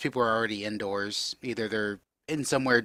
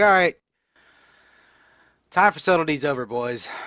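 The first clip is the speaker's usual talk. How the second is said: woman's high, loud calling-out yell; 5 semitones higher, 6 dB louder than usual. As the movement stops, a woman calls out to the boys, yelling out. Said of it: "You hear somebody yell up, yell out".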